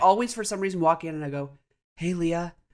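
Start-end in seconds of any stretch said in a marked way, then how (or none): 2.0-2.5 put-on hushed voice, quieter. Retelling walking in to wake someone from a nap: retelling a quiet greeting. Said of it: "'cause I'm trying to be quiet".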